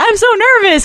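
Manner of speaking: high, laid-back, super chill easygoing voice. Imitating Nisa saying she is nervous: imitating Nisa, smiling. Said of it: "with, like, a huge smile on her face".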